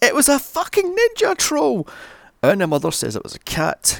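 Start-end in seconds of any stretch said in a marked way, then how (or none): 0.0-1.9 very high, loud shrieking yell, acted out. Recapping a scene, the speaker acts out the boy's line, retelling a scream. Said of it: "And then screams".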